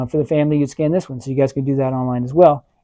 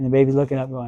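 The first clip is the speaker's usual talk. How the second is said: ordinary talk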